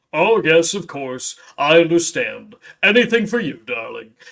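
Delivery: deep, low male voice with an obliging tone. Imitating the voice from the speaker in a flipped-open game board, deep male voice. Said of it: "some kind of like deep male voice going like".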